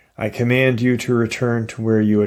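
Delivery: ordinary delivery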